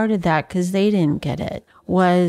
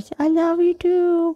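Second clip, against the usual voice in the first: put-on tiny, very high little girl voice; 10 semitones higher than usual. Retelling how a little girl answered her father: little girl voice. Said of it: "in this little girl voice".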